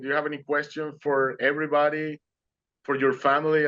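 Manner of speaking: usual speaking voice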